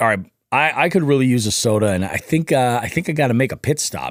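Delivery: ordinary delivery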